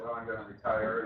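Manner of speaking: normal talking voice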